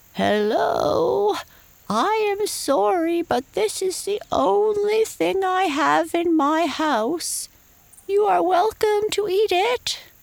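put-on elderly giraffe voice, pitched high. Narrating a story, the second giraffe offers a leaf cake through the door, in an old giraffe voice. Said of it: "said in an old giraffe voice".

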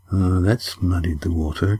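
sour, disgusted grumble. A narrator reads Cam's reaction to Yan's remark, muttered disgustedly. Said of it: "Cam muttered disgustedly".

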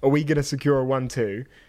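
ordinary delivery

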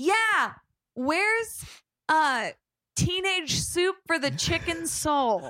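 mock, high, drawn-out, called-out voice. Retelling calling back across a bookstore to a worker: imitating own past yell. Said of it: "I yell back at him and I go".

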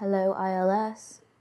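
speaking in a hushed whisper. Making sure no one is around, a player's character greets the crystal, whispering. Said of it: "and just whisper".

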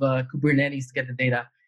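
ordinary talk

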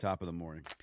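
very low, quiet, barely awake sleepy voice. Greeting the host after just waking up late: sleepy unenthusiastic greeting. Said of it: "what an enthusiastic greeting that was".

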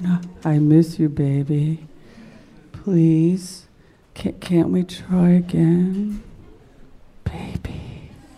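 slow, sighing, heartfelt, emotional whisper. Retelling how the awaited voice sounded on the phone: imitating emotional sighing whisper. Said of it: "sort of whispering and very emotional".

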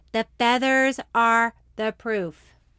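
loud emphatic delivery.

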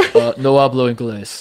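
very slow, innocent-sounding, playing dumb. Retelling Sammy Sosa answering Congress at a microphone: imitating Sammy Sosa. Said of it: "He's like".

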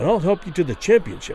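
ordinary delivery

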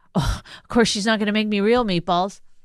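mocking, mimicked, griping complaining tone. Mocking how the other speaker talked about the meatballs: mocking imitation of a complaint. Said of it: "you're saying it like".

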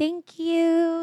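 high-pitched, babyish mock baby voice.

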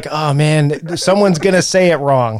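normal talking voice

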